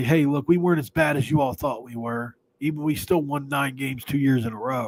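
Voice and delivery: ordinary talk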